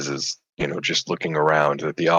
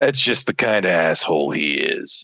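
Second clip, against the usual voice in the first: rough-edged, gruff adventurer voice. A narrator voices a character who nods and answers the group, in a gruff adventurer voice. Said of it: "in a voice that sounds decidedly like a gruff adventurer".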